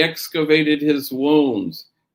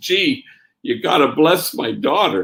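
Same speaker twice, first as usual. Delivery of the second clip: put-on panicky voice. Retelling a man's Friday afternoon phone call about his daughter, imitating a panicky voice. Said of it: "kind of panicky in his voice".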